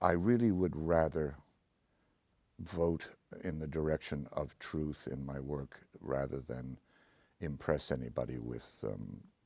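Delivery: plain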